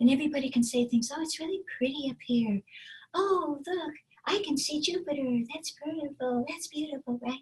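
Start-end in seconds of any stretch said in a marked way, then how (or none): 1.1-7.2 very breathy, high character voice, higher and quieter. Showing a high-placed cartoon character floating in the clouds: very breathy, high character voice. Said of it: "the first character is very breathy".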